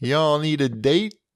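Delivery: Memphis-style accent. Addressing the listeners in Memphis, Memphis accent. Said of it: "That was a great Memphis accent you just did".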